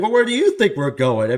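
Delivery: put-on snide, high voice. Retelling the dad's reply to a lady: imitating a smart-ass answer. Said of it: "you get a smart ass answer".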